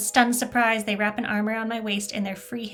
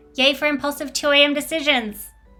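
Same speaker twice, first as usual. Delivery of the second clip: put-on cat voice, higher and louder; 4 semitones higher, 4 dB louder than usual. The narrator answers her own question to her cat, Alistair's cat voice. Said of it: "I like doing Alistair's voice as a cat".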